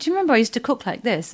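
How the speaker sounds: ordinary delivery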